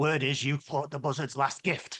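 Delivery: raspy, rasping voice. Narrating a stranger named Cankins who slides onto a stool uninvited, raspy Cankins voice. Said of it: "The name's Cankins".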